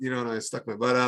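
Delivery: ordinary talk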